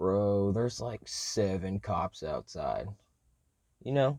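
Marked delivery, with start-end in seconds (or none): 0.0-2.9 utterly composed, very calm, slow delivery. Retelling how T Mac told the speaker about cops outside, imitating T Mac's very calm voice. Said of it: "in the most calmest voice ever".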